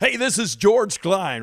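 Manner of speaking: very high, booming, loud radio DJ voice. Recalling a radio announcer who once interviewed you live, you do his George Klein radio announcer voice. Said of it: "George was great with that kind of voice".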